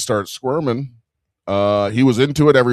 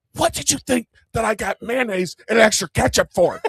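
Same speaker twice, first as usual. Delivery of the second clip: very high-pitched shouted whisper; 10 semitones higher than usual. Retelling what he said to her in a movie theater, whisper-yelling. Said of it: "I'm whisper yelling at her".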